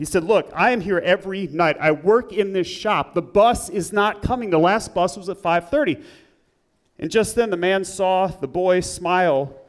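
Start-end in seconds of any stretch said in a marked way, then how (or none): none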